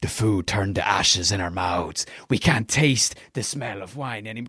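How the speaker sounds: put-on speaking with Scottish accent. Quoting a movie character's lines to a listener, in Captain Barbossa's Scottish accent. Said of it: "he's got this like Scottish accent".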